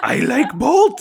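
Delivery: very high, loud, piercing shrill voice. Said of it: "his voice sounded like the new Pennywise".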